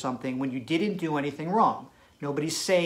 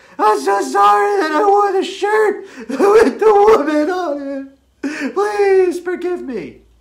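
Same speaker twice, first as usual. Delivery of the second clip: very high, very loud, tearful sobbing; 11 dB louder than usual. Acting out a man apologizing a second time: imitating someone crying. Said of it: "this time he cries".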